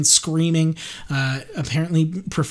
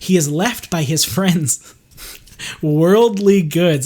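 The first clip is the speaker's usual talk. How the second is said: words broken up by laughter; 4 dB louder than usual. Explaining a story's plot to listeners, laughing while talking. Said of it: "I'm laughing because it's just so straightforward".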